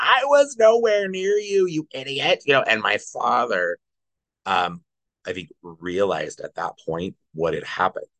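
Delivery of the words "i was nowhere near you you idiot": mock screaming, much higher pitch. Telling how his mother, on the phone with 911, screamed back; retelling a scream. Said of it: "she's screaming back".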